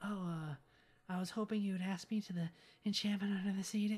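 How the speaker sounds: high, winded, breathless delivery. Retelling a movie scene, imitating out-of-breath Lorraine. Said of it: "she's always, like, out of breath".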